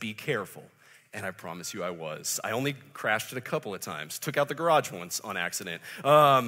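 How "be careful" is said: mock serious, firm, stern delivery. Retelling a father's warning while handing over truck keys: imitating dad's stern voice. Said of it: "with a stern voice".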